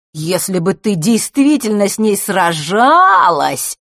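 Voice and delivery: loud drawl, stretching out every word. Not believing the girl's story, he answers her, drawling. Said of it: "растягивая слова".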